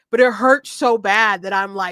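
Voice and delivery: ordinary talk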